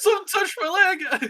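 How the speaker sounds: very high, shrill, freaked-out exclamation. Voicing startled figures in a dark room: freaked-out cry. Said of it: "They kinda all freak out for a little bit".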